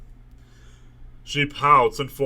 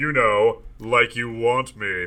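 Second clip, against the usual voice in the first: usual speaking voice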